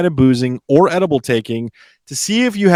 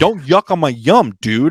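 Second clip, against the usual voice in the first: put-on, slow, aggressive, really put-out voice. Showing how someone really put out would say the phrase, aggressive and put out. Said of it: "sounds so aggressive. Like somebody's really put out".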